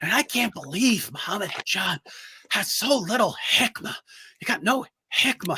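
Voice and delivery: constant soft, slow, high whisper. Describing how Sajid always sounds, imitating his whisper: whispering Sajid impression. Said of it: "he's always whispering like this".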